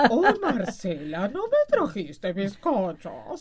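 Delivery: loud, booming goofy cartoon voice with wildly swinging pitch. Speaker addresses Marcela in a bit, Homero voice. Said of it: "¿Me puedo hacer la voz de Homero".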